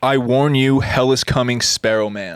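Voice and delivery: ordinary delivery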